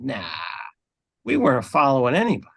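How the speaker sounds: crying out in a swooping, cawing crow voice. A character is asked whether they were following anyone: very crow-like voice. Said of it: "in a very very crow voice, she she kind of cries out".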